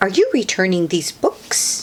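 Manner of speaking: usual speaking voice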